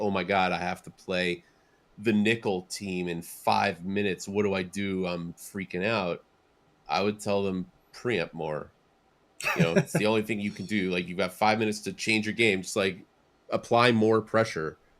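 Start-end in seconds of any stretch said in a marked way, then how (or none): none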